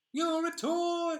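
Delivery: high, loud, belted cowboy-toy cry. Trying the Woody impression again, which ends up sounding like Jerry Seinfeld. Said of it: "that sounds like Jerry Seinfeld".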